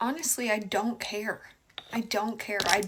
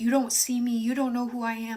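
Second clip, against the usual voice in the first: put-on pleading tone, louder; 4 dB louder than usual. Retelling a date's words during a fight, imitating him pleading. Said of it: "He's still trying to plead with me to stay".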